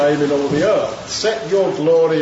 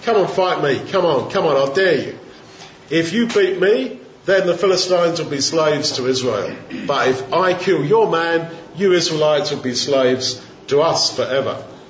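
ordinary talk, nothing marked

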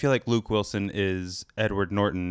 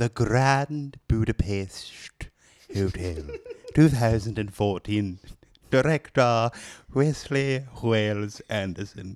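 stuffy put-on British accent, man's voice. Asked to read the movie details as a stuffy British guy: stuffy British guy voice. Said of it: "Stuffy British guy".

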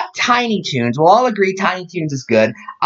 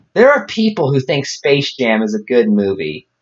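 ordinary delivery

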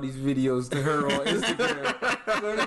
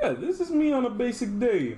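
bland, flat put-on voice, pitched very high; 9 semitones higher than usual.

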